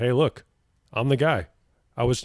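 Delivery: ordinary talk, nothing marked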